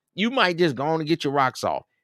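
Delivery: ordinary delivery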